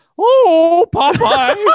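very high, loud cartoonish lady voice. Chatting about Popeye, speaker shows off an impression; Olive Oyl impression. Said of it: "This is my olive oil impression".

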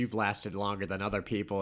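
ordinary delivery

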